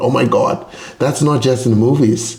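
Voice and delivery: ordinary delivery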